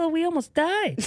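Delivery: very high, giggling, laughing through the words. Retelling a brother's reaction after a ski rescue: imitating someone laughing while talking. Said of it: "he's just laughing like".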